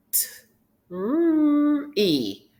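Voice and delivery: said slowly. Sounding out a word for learners sound by sound: said slowly. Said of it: "Let's say it slowly".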